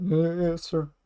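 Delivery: muttered under breath. A game narrator voices a janitor answering the player: muttered under his breath. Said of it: "Under his breath, you hear".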